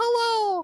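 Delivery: very high-pitched character voice. Showing how the character Floopy talked: Floopy voice. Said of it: "he talked like this".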